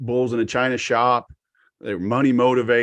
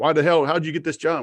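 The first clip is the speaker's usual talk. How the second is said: put-on screamed rant, higher pitched; 5 semitones higher than usual. Retelling an aggressive sales manager screaming at his team: imitating a manager screaming. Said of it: "now he's just screaming at his guys".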